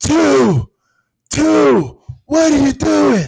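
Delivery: very high, very loud, rough, shrill yell. Retelling how his coach ran out to the field at night looking for him, retelling a coach's yell.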